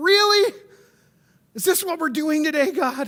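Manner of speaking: whiny, complaining voice. Retelling a frustrated prayer from this morning: retelling own whiny voice. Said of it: "we get that whiny voice".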